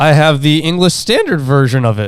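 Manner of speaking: voice cracking. Talking with the others in the conversation, with a voice crack. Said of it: "Nice voice crack".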